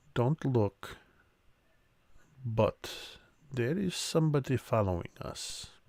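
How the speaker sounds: very quiet, hushed murmur. Voicing a character warning a companion they are followed: speaking very quietly. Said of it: "just says very quietly".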